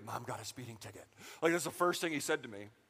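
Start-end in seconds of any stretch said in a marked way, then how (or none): 0.1-1.1 low, soft, whispered aside. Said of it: "he just whispers in my ear".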